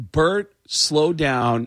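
ordinary talk

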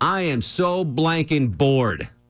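grand, declaiming, proclamation-style delivery. Retelling a meal where a man sat back, imitating his loud proclamation. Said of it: "proclaims in a very loud voice".

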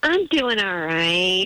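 disappointed, let-down tone. Caller answers the radio host's how-are-you, disappointed. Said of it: "you can just hear the disappointment in your voice".

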